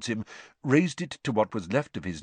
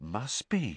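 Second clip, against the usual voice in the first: low, hushed, awestruck, wondering tone; 6 dB quieter than usual. A character answers his friend's muttered question about a stranger, in a low, awed voice. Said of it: "said Ron in a low, awed voice".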